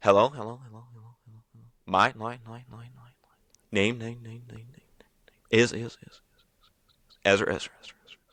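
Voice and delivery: reverb-style echo effect on each repeated word. Showing a trick ventriloquists use on their mic: voice echo effect. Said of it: "It's a voice echo".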